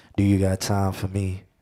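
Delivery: seductive voice. Describing speaking close to the mic in character, showing the seductive voice. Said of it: "I'm speaking in that voice like".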